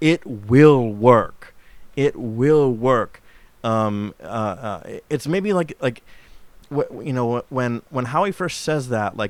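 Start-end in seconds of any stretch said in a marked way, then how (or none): 0.0-3.2 impossibly booming, very slow and drawn out. Quoting Lord Summerisle's line from the film: impossibly booming Christopher Lee voice. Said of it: "impossibly booming voice is like".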